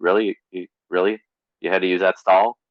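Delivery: very sarcastic, dry, deadpan delivery. Retelling what the speaker said to a man leaving the office stall: retelling sarcastic remark. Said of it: "very sarcastically said".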